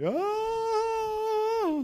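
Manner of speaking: yelling high and loud.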